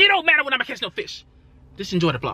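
all-out, high-pitched yelling rant. A fishing vlogger talks back to viewers, yelling. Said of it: "Sorry for yelling".

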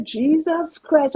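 hushed whisper, under the breath. Retelling a reaction to a text message: retelling own whisper. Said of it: "I whispered".

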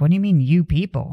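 ordinary talk

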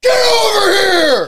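very loud, shrill, high-pitched battle-cry yell. Act out a man away from the mic, asked to do the voice, in a loud Scorpion voice. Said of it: "do the Scorpion voice".

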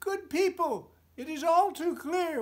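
bold little mouse voice, very high, very loud. Narrating a fable, voicing a mouse addressing a gathering of mice: mouse character voice. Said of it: "one mouse made bold to say. / one mouse made bold to say. If we could only know when puss is near, she'd seek some other prey. So I plan to mark her trail. Think, if we placed a bell around her neck".

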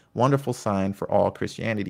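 ordinary talk

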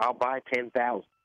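put-on a bit of Southern accent. Imitating a booster offering to buy tickets: Southern accent as T. Boone Pickens. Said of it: "have a kind of a Southern accent there with T Boone Pickens".

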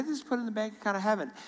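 high, fast, matter-of-fact tone. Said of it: "So matter-of-factly".

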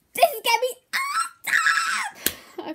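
loud, very high, swooping cartoon pony voice. Doing voices for a short video, the speaker announces Rainbow Dash: Rainbow Dash voice. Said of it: "Rainbow Dash".

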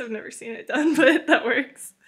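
talking while laughing and giggling. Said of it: "I don't know why I'm laughing".

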